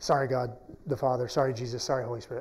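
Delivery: soft, repeated half-whisper under the breath. Retelling how Elijah half-whispered apologies to God: imitating Elijah half-whispering. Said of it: "I would hear him whisper".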